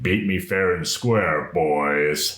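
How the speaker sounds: deep, slow growl like a revving engine. Voicing an undead driver who calls out from his car: voice deep as an engine's growl. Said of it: "in a voice as deep as the, his engine's growl".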